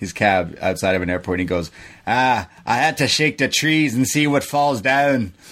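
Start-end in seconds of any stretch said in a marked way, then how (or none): 2.1-5.3 poor, fake Irish accent with raised pitch. Retelling a man's answer about kicking Johnny, in a bad Irish accent. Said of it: "that was not a good Irish accent".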